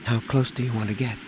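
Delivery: plain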